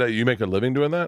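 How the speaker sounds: usual speaking voice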